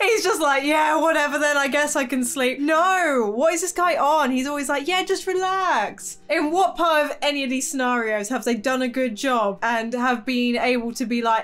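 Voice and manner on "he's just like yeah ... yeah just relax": normal talking voice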